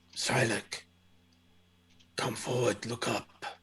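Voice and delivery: very soft, hushed, urgent voice.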